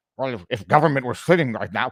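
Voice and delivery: low, quiet, mumbled voice. Mocking a politician's remark, imitating Elizabeth May under her breath. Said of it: "you hear how just under her breath".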